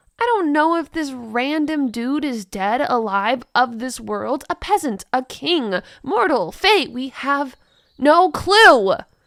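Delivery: irritated, huffing tone. Ash answers a question she can't answer; exasperated, huffing. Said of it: "I've been exiled since before I was born. / She pulls out a piece of paper where is drawn the large family tree of [name]. / pointing out she's only twenty-five years of age".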